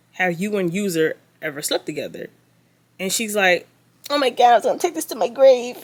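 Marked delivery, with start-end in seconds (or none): 4.1-5.8 taunting, high, mocking woman's voice. Retelling what a man asked a woman, speaker quotes her answer in a mocking imitation of her voice. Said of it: "talking in that voice".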